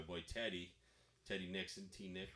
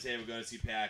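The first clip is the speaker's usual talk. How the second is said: ordinary talk, nothing marked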